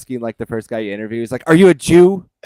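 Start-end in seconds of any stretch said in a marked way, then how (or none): 1.5-2.2 mock aggressive, very loud and high voice. Retelling a remixed game clip's interrogation: imitating aggressive questioning. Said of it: "aggressively asking".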